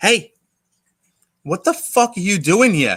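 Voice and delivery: gruff manner. Retelling being woken on a park bench: imitating a New York City cop. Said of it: "a New York City cop wake me up and be like".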